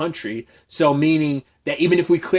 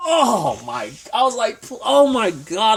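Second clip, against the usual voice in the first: choked up, high-pitched, tight throat, holding back tears; 7 semitones higher than usual. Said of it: "I was choking back to tears".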